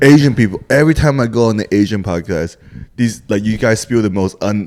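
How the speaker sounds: normal talking voice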